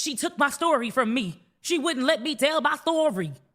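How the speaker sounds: fake, newly put-on Atlanta accent. Quoting the things a man who moved to Atlanta says, in a fake new Atlanta accent. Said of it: "in some fake new Atlanta accent".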